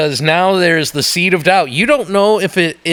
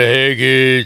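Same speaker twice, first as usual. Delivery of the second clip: put-on tough-guy voice, lower pitch; 5 semitones lower than usual. Joking about being raised from the dead: Sylvester Stallone voice. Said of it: "I'll sound like Sylvester Stallone".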